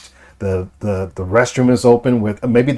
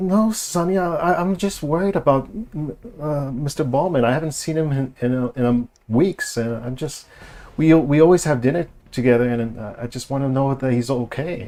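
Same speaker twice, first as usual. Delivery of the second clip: meek, timid voice, halting and stumbling; 4 semitones higher, 4 dB quieter than usual. Describing how a woman answers when a voice is raised at her, acting out a timid voice. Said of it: "she kind of gets a little timid".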